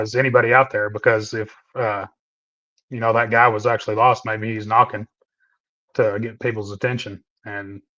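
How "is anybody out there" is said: usual speaking voice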